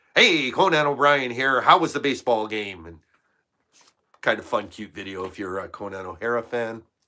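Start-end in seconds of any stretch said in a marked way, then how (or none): 0.1-2.8 loud, 1930s-style newsreel announcer voice. Describing an old practice interview video, doing Conan O'Brien's 1930s news voice. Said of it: "news voice from the thirties".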